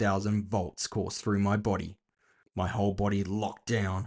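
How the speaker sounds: plain reading voice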